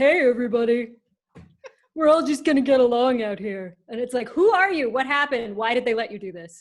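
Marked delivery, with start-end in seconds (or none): 0.0-3.8 nasal surfer voice, louder. Describing Hemsworth's role in Bad Times at the El Royale, doing his nasal surfer voice. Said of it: "he does that incredible nasal surfer".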